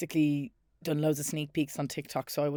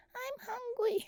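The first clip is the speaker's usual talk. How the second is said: put-on very high, soft, tiny baby voice; 7 dB quieter than usual. Imitating how a woman talks to the dad, Labubu baby voice. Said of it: "It's like a baby voice".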